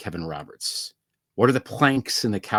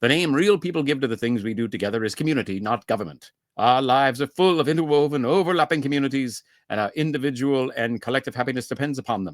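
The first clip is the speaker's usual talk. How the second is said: heavy, bad North Atlantic accent; 4 semitones higher than usual. Reading an excerpt by Kevin Roberts, in a terrible North Atlantic accent. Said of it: "I'm going to do a terrible North Atlantic accent".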